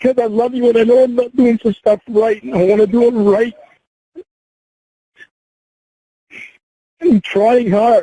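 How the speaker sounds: high-pitched, tearful, sobbing through the words. Asked why they are crying, the speaker answers, crying. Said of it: "why are you crying?".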